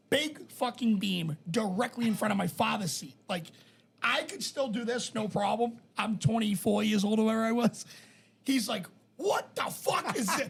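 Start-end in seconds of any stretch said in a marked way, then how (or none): 9.1-10.5 put-on angry man's screaming, high-pitched outburst. Retelling how a father reacted to a beam blocking his seat: imitating a man screaming. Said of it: "Screaming at the top of his lungs".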